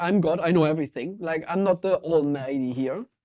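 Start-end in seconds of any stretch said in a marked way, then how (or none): none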